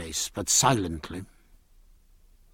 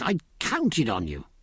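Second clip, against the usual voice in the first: usual speaking voice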